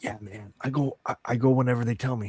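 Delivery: quiet, hushed whisper. Voicing a character who leans closer to answer: whispering. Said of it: "closer and whispers".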